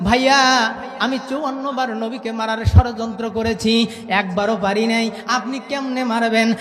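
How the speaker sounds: normal talking voice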